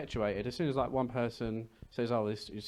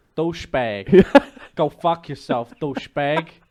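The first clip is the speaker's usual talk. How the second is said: very loud Boston accent attempt; 4 semitones higher, 16 dB louder than usual. Asked whether they can do Boston, the speaker gives a Boston accent attempt. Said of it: "Is that Boston or is that New York?".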